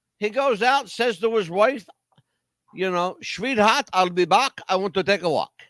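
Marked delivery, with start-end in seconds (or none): 3.2-5.5 very bad, fake put-on German accent. Telling a story about a man who makes suits, worst german accent. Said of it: "In my worst German accent".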